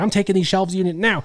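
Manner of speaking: play-acted, light, shouty mild yell. Retelling a fight over a shelving unit; imitating a man yelling. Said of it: "he's literally like yelling".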